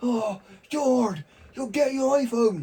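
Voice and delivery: put-on annoyed West Country accent. Acting out the stepdad's reply about getting an iPhone, imitating an annoyed West Country stepdad. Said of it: "quite West Country sounding. That's his annoyed voice".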